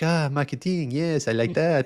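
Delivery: put-on French accent. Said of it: "[name] speaking in a Boris Diaw French accent".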